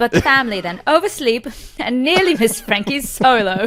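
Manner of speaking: a touch of Australian accent. Summarizing a story's plot, slipping into a slightly Australian accent. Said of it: "I went a little Australian at the end".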